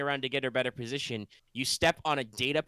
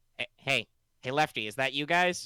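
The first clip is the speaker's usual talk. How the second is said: robot guard voice heard over a speaker box. Retelling a tense scene where an intercom clicks on, in a droid voice. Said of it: "you hear a droid voice say".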